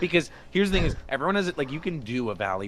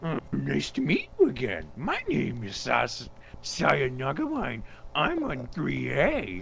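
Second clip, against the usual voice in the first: high, swooping, pitched-up cartoon-dog voice; 5 semitones higher than usual. Reading a character's self-introduction while talking like Scooby-Doo: Scooby-Doo voice. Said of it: "while talking like Scooby Doo".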